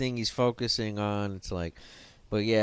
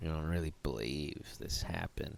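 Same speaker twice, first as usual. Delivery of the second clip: mock patronizing tone, lower and quieter; 6 semitones lower, 11 dB quieter than usual. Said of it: "The way he leans in with this".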